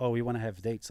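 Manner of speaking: normal talking voice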